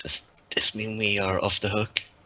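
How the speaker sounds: soft, hushed whisper. As Colin, a player whispers a question to Jack, whispering. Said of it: "Colin kind of whispers to Jack".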